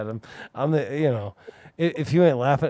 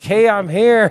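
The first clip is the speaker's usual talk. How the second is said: very loud, high-pitched shout; 7 semitones higher, 9 dB louder than usual. Telling what the front desk ladies heard him shouting; retelling a shout. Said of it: "hear him shouting".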